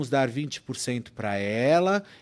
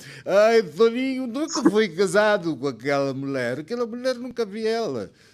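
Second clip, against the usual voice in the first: high, crying, weepy, tearful voice; 8 semitones higher, 4 dB louder than usual. Acting out the mother who informed on her own son, imitating her crying. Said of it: "Ela chorando lá".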